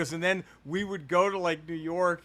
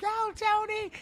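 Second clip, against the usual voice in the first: put-on screaming, higher pitch. Retelling a mother cheering a football run: imitating mother screaming. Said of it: "she was just screaming".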